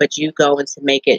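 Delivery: ordinary talk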